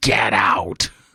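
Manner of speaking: acted growling voice. Retelling what a voice on an EVP recording said, imitating a growly voice. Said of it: "you hear this growly voice saying".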